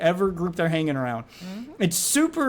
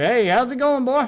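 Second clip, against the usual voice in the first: put-on down-home country accent, pitched up; 5 semitones higher, 3 dB louder than usual. Showing how his talking all country might sound to a stranger, country accent. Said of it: "if he hears me talking all country".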